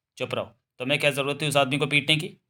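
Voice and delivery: ordinary delivery, nothing marked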